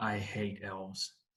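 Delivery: very quiet grumbled mutter, under the breath. Voicing a character who rolls his eyes: muttering under his breath. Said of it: "audibly under his breath says".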